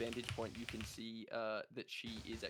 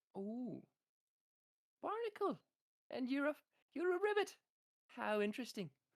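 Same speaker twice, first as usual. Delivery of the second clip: put-on sweet lady voice, much higher pitch; 14 semitones higher, 3 dB louder than usual. Voicing a tavern lady who just heard two characters' names, lovely little tavern lady voice. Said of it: "his lovely little tavern lady voice".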